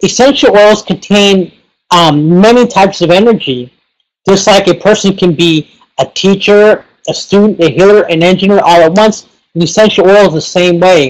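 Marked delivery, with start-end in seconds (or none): none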